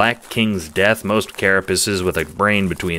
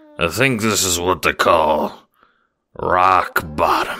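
put-on slightly drunk, tipsy speech. Narrator reading the second-person hero addressing the boys, tipsy. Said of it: "you say tipsily".

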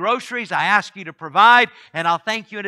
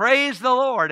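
high, light shout at full lungs; 5 semitones higher than usual. Telling a story about a woman on her front porch, retelling a shout at full lungs. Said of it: "she would shout at the top of her lungs".

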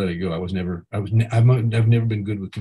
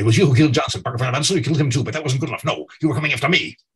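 put-on rapid-fire, pitched-up old-Hollywood movie patter; 5 semitones higher than usual. Recalling old film dialogue, doing a fast-talking Humphrey Bogart voice. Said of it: "the Bogart voice".

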